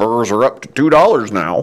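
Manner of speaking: put-on grumbling, complaining old man voice. Recalling walking in with his dad complaining, doing his old man's voice. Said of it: "I had to go to my old man voice".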